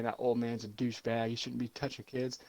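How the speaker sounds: normal talking voice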